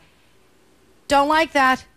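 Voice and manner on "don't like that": high, loud, sharp dismissive snap. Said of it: "you go like this and stop and go".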